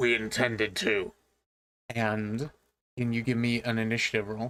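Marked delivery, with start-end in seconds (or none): 0.0-1.1 very deep, rough, gruff barking voice. Narrator voicing an unseen figure answering back after approaching footsteps, very deep gruff voice. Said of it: "a very deep and gruff voice say".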